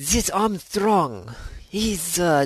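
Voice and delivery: bad put-on Italian accent. Speaker tries out an accent while talking about armstrong; bad italian accent. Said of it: "sucking at accents".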